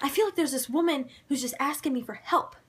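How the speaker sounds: emotional, earnest pleading tone. Retelling how an investigator sounded, imitating someone getting emotional. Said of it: "he gets all emotional".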